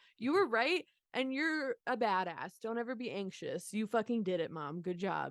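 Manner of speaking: ordinary delivery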